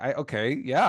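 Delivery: normal talking voice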